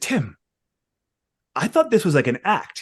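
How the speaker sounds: put-on secretive, conspiratorial tone. Retelling how Harley came up during the convention: imitating Harley's conspiratorial tone. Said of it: "all conspiratorial".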